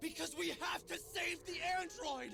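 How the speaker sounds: very high, hammy battle-cry yell. Answering a teammate who asks why they are doing this, shouting line delivery. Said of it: "At what point in time do we need to be shouting like this".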